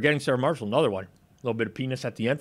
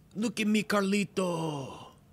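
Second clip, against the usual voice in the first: slow, drawn-out delivery with raised pitch; 9 semitones higher than usual. Quoting a movie scene in Carlito's Way: Viggo Mortensen impression. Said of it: "Viggo Mortensen. That's a perfect impression".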